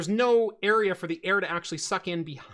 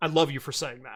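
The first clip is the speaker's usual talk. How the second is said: put-on gravelly Canadian voice, lower and faster; 5 semitones lower than usual. Retelling a call where the company owner praised him: imitating Doug's gravelly voice. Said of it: "if I roll into that that voice".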